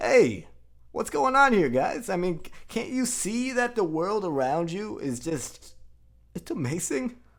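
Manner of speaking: high, loud, goofy cheerful hero voice. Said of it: "he's this goofy attitude".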